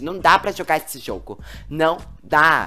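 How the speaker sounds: usual speaking voice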